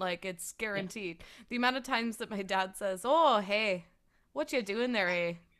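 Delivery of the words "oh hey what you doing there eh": put-on Wisconsin accent, Canadian-like. Quoting what their dad always says, imitating dad's Wisconsin accent. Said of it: "the Wisconsin accent is the watered down Canadian accent".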